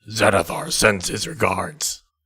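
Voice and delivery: put-on low, deep orcish-accented voice. Following a stated direction, says a line in deep voice, orcish accent. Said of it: "In a deep voice with a orcish accent".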